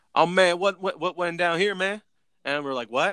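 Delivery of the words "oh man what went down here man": put-on Southern drawl, much higher, slower. Retelling what a guy who walked up asked, in a Boomhauer-style Southern drawl. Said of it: "you got some Boomhauer characters".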